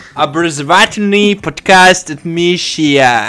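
mock American accent, speaking Russian. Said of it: "американцы говорят на русском вот с таким акцентом".

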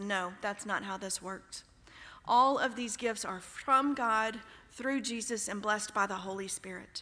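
plain

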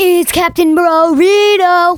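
intense, very loud delivery. Saying the podcast host name when asked to speak: very intense delivery. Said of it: "that was pretty intense".

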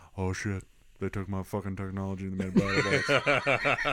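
deep, low voice with rhythmic cadence. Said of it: "he's got that cadence now".

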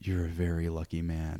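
slow whisper. Recounting what a man whispered to the speaker about a woman, retelling a whisper. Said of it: "he like whispered".

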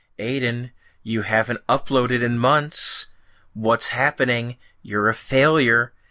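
normal talking voice

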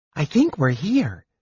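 carrying stage whisper. Narrating, reading Tass's line to Palin: loud whisper. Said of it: "Tass said in a loud whisper".

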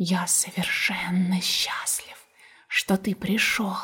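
hissing, whispered, soft, breathy snake voice. Narrator reads the snake answering the bear cub, in a hissing snake voice. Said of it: "прошипел змей".

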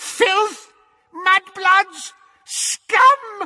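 very high, shrill, piercing shriek. A woman's portrait wakes and yells after people running past, screaming. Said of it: "she screamed after them".

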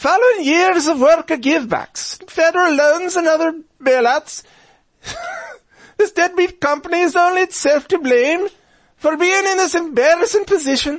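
put-on Irish accent, voice very high. Reading a union leader's statement from a news report aloud, in an Irish accent. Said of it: "I should have done that in an Irish voice".

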